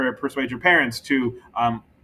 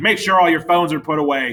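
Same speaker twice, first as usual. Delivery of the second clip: harsh yelling, higher and louder; 3 semitones higher, 4 dB louder than usual. Showing how a harsh message to students sounds: shouting at students. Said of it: "shouted at students".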